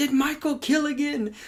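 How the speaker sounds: mock yelling, shouted up from below. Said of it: "Loomis yells up at Hawkins".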